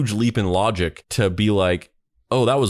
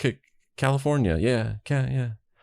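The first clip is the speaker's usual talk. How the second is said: mock reluctant, sheepish, halting, stumbling stammer; 3 semitones higher, 4 dB quieter than usual. Retelling how someone finally answered: mock-sheepish, stumbling hesitantly. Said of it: "finally kind of sheepishly being like".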